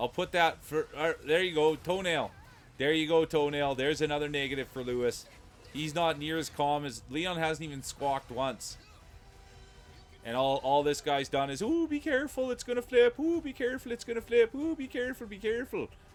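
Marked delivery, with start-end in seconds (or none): 11.6-15.9 mock, very high, panicked, repeated fretting. Mocking how another player talks during the game, imitating panicky voice. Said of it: "That's panic".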